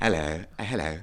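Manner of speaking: put-on posh English accent. Put on the spot to show they can do posh, posh accent. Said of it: "can do posh as well if you want".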